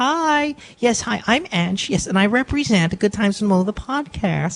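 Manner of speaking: fake, put-on professional phone voice. Teased by friends for having a fake voice, showing it off: fake professional voice. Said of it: "you're one of those people with the fake voices".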